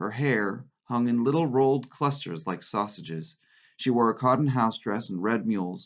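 plain reading voice

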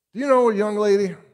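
harsh scolding tone. A father, upset at an empty shoebox present, speaks to his little girl, harsh. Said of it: "he said harshly".

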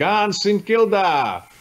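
put-on broad Italian accent, laid on thick, high yell. Remembering aunts who came from Italy calling out, retelling a broad Italian-accented yell. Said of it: "their broad Italian accents yelling out".

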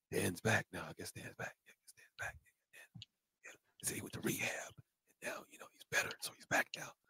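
mock hushed whisper. Speaker acts out what everyone at work says, imitating a whisper. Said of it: "That's why we're whispering".

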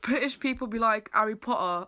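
plain

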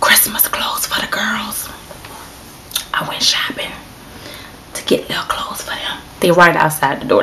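hushed whisper. Answering questions with the girls right outside the door: whispering. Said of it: "that's why I'm whispering".

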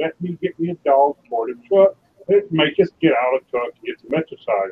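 normal talking voice

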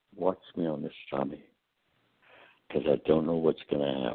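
speaking quietly. Retelling words said in passing before giving a speech: retelling saying it real low. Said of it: "I just said real low".

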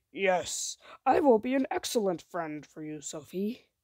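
rough, gravelly monster voice. A monster in a story answers Sophie, in a gravelly monster voice. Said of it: "said in a gravelly voice".

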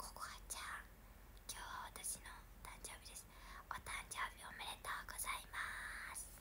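fast, quiet whisper.

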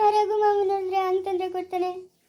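tearful, crying, complaining tone. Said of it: "ಅಳ್ಬೇಡ ಸುಮ್ನೆ".

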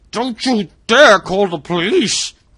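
very loud, very high, very slow drawn-out yell. Robert, cleaver in hand, calls toward whispers upstairs, shouting. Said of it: "Robert shouted".

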